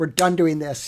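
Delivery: acted, mock-stern tone. Dad showing how he talks to his eight-year-old, mock-stern voice. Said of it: "if I use a stern voice".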